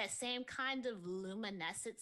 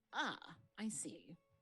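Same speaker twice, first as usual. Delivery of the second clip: dramatically deeper, soft voice; 4 semitones lower, 5 dB quieter than usual. Retelling how he reacted after a few seconds, imitating a much deeper voice. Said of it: "that voice is like way deeper".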